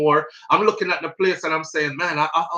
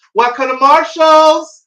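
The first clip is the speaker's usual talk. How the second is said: put-on high, drawn-out, friendly Southern accent clerk voice; 9 semitones higher than usual. Speaker recalling store greetings from growing up in the south, imitating a southern store clerk. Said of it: "Any store you walk in".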